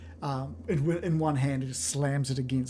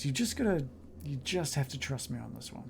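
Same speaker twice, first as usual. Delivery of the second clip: voice dropped right down, lowered and hushed; 6 dB quieter than usual. A woman tells Davis he just has to trust her: lowered voice. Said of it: "She sort of lowers her voice".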